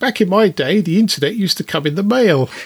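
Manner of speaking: put-on high elderly woman voice. Retelling what a six-year-old said, in an old lady voice. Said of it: "in an old lady voice".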